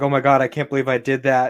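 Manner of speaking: ordinary talk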